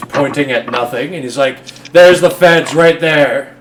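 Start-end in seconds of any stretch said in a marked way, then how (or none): 1.9-3.4 raised voice, yelling out loudly. A character yells to the crowd, pointing at nothing: yelling to the crowd. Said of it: "Zane begins yelling to the crowd".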